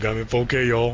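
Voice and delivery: put-on deep character voice. Riffing on Laserbeak filming someone, speaking in a deep Laserbeak voice. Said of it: "I don't know why he's talking all deep".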